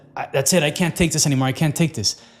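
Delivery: plain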